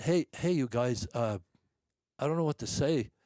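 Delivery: stuttering, stammering speech. Retelling thanking the men after a lucky break: imitating own past stuttering. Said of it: "I'm stuttering".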